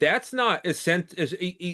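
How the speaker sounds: very slow, halting stutter, stuck on the word. Speaker, making a point about a well-paid player, gets stuck on a word; stuttering on a word. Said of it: "I'm stuttering on the word".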